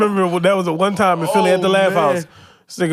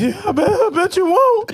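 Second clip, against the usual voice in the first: very high voice, cracking and breaking; 12 semitones higher than usual. Retelling own reply to a threat in philly: imitating own voice cracking. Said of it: "and my voice cracked".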